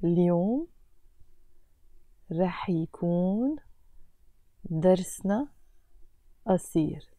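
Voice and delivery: very slow, halting, broken into pieces. Language lesson, breaking down a sentence: very slow reading. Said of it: "I will read it very slowly".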